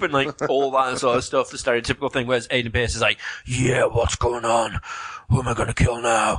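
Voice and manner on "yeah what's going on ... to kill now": rough, gruff video game hero character delivery. Speaker contrasts stereotypical YouTubers with how the game's lead talks: gruff Aiden Pierce voice. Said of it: "Does he have a gruff voice like that?".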